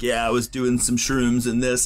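put-on burnout surfer voice. Retelling what a caller said before hanging up, in a burnout surfer voice. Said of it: "burnout voice, this, like, surfer kind of".

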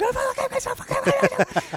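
put-on high-pitched, shrill, swooping, enraged screaming. Retelling losing it in gridlock traffic: imitating own screaming rage. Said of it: "screaming at the top of my lungs".

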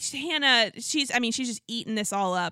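ordinary talk, nothing marked

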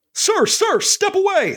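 very high-pitched, firm but friendly delivery. Acting as Wayne, ordering Pete away from a burning building, firm commanding tone. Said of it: "like that kind of tone".

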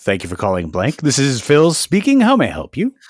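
swooping put-on radio announcer style voice. Asked to show a phone voice, answering a call: put-on radio voice. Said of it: "I would do a radio voice".

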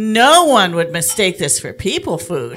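very loud, animated, swooping announcing voice. Retelling a flight attendant's remark about the speaker's dog: very loud voice. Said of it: "the flight attendant said in a very loud voice".

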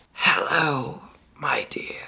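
rasping, silky, suave whisper. Reading a story aloud, a figure greets a prisoner in her cell: raspy suave whisper. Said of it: "A raspy, suave voice whispered".

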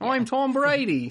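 fake, very high, half-cracked Boston accent. Podcast hosts are trying to crack the Boston accent; do Tom Brady in an attempted Boston accent. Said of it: "See, we're getting there".

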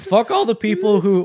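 voice breaking partway through. During an episode segment, a co-host starts naming people, voice cracking. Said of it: "my voice is cracked".

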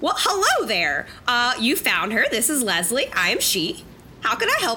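slightly altered high, swooping voice. Trying out a new character voice, speaking as Leslie, slightly altered voice. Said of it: "slightly alter my voice in a way that hopefully is comfortable".

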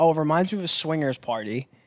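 ordinary talk

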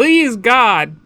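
high, loud scream. Describing a small owl character calling people on a giant phone: imitating someone screaming. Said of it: "screaming into the phone like".

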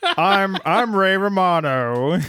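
drawn out, pinched and high. After the other speaker's attempt, trying a more nasal voice: awful nasal Ray Romano impression. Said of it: "that was awful".

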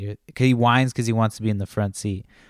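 usual speaking voice

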